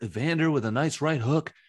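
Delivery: terrible, botched, put-on ringside commentator voice. Imitating Trump commentating a boxing match: terrible Trump impression. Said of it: "That was a terrible impression".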